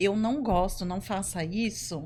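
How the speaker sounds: ordinary delivery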